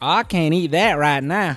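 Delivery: mocking, very loud, high-pitched southern accent. Teasing a friend who starts sounding southern after a few, repeating her words: Aleena's southern accent. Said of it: "she starts randomly sounding southern".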